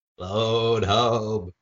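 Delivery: put-on little alien voice. Doing a bit about a movie, E.T. impression. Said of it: "This is my E.T. impression".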